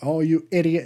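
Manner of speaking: charming put-on British accent. Retelling a man's line to a woman in a scene, imitating a British accent. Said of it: "he says it in a British accent".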